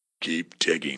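low, soft, gruff mutter. Reading a story aloud, the narrator voices Bob speaking to the diggers in a gruff voice. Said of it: "Bob said in a gruff voice".

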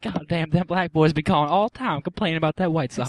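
put-on female voice. Imitating the woman who hung up on the call: imitating the woman who hung up. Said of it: "She's like".

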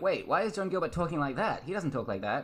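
usual speaking voice

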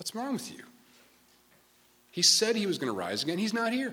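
mock, pitched way up, baffled incredulous disbelief. Retelling the angels at the tomb speaking to Peter and John, imitating incredulous angels. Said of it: "Can you hear kind of the incredulous?".

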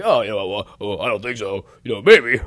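low, manic, maniacal puppet-like voice with hemming. Imitating the promotional guy replying to praise: imitating someone maniacal. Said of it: "you're making him sound, like, maniacal".

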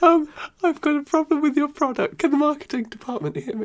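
squeaky-sounding voice.

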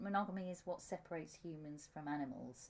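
ordinary talk

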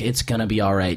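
ordinary talk

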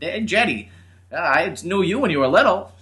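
put-on very high, loud, old-timer New Hampshire accent. Unsure if you can even do it anymore, try out an old man New Hampshire accent. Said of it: "in the old man New Hampshire accent".

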